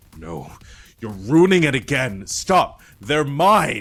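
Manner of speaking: thundering, booming, very loud, rising voice. Narrating a game scene as the same voice objects again, booming voice. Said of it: "the same booming voice that says".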